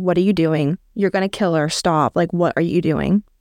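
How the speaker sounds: ordinary delivery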